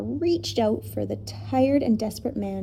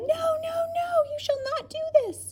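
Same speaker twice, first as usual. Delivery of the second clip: desperate outcry, very high-pitched. A professor cries out in dismay as a huge bird attacks the children, a desperate cry. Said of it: "he cried".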